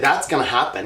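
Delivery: ordinary talk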